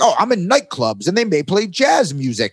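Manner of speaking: put-on old-fashioned, old-timey 1920s father voice. Retelling own past words about nightclubs: old 1920s dad voice. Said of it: "I sounded like a, a, an old dad from the nineteen twenties".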